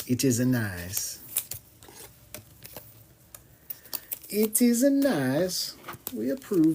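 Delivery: unhurried, soft, sing-song approval, nice stretched long. Voicing approval the way another person would, do an imitation of Primo. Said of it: "That's me doing an imitation of Primo doing that".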